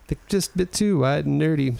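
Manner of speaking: ordinary talk, nothing marked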